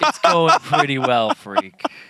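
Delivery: loud, swooping drawl with playful disdain. Answering the question asked every week: mock disdain in the voice. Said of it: "that little bit of disdain in my voice".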